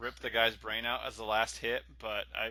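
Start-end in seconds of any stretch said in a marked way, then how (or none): none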